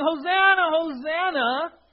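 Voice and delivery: very high, loud, stirred-up crowd-style yell. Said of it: "They're yelling".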